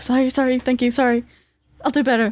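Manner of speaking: rushed, relieved, hurried gabble. Voicing a kitchen worker hurrying away after handing over a plate: very relieved apology. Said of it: "they are very relieved, and they go away very quickly".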